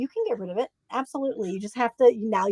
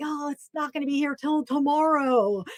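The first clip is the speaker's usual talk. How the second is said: put-on anguished whining; 3 semitones higher, 4 dB quieter than usual. Retelling his own reaction to waiting until tomorrow, mock-agonized whine. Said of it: "Listen to the agony in my voice".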